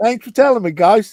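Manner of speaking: bad put-on Cockney accent. Joking with the group about British privilege: shitty Cockney accent. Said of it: "Shitty Cockney accent".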